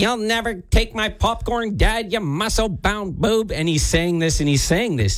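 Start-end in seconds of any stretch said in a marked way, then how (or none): 0.0-3.5 high-pitched cartoon villain voice. Retelling a three-year-old talking to Dad in the theater, Skeletor voice. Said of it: "he's doing the Skeletor voice".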